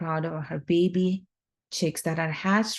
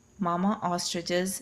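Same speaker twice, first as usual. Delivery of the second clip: usual speaking voice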